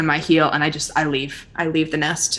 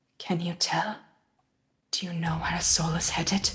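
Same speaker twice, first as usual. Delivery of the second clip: close, confidential murmur, lowered and soft; 9 dB quieter than usual. A player steps close to another character and asks in a lowered voice. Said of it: "I lower my voice".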